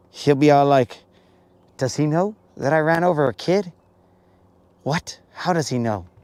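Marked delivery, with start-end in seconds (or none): 1.8-6.1 baffled, bewildered, totally confused wondering aloud. Imagining how another person would react to news: imitating a confused person. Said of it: "he'll just be totally confused".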